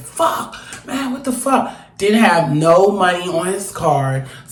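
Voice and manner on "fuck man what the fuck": put-on, breathy, hushed stage-whispered outburst. Retelling how a man came out of the store: imitating someone screaming. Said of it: "He starts screaming".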